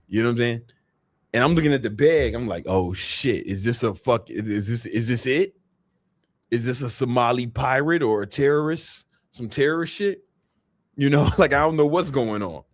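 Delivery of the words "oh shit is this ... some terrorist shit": usual speaking voice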